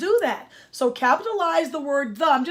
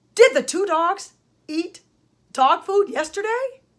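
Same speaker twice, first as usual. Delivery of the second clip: rising end intonation, higher pitch. Teaching a grammar lesson on question marks: rising question intonation. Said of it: "My voice went up at the end".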